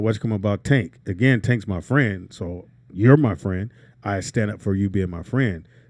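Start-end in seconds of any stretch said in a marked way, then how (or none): none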